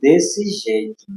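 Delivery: slow, deliberately drawn-out, slowed-down delivery.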